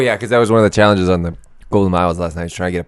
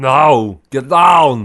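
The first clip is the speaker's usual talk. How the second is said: high put-on Austrian accent with the word "no" stretched; 7 semitones higher, 4 dB louder than usual. Doing an impression for another speaker: Arnold Schwarzenegger impression. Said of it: "how bad his accent is".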